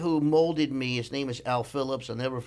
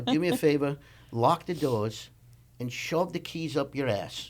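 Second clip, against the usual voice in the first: put-on, mock English accent. Retelling how a boss scolded him on calls: imitating boss's English accent. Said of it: "So I'm not good with his accent".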